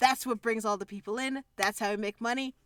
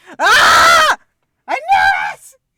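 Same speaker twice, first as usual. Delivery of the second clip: very loud, very high, drawn-out, shrill excited scream; 20 dB louder than usual. Reacting to a story scene, screaming excitedly. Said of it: "I am so sorry to headphone users".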